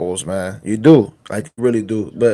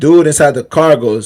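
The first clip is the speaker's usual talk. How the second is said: normal talking voice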